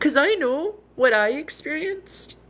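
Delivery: emotional, pitched high. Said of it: "I'm gonna get emotional".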